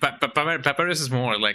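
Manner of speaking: plain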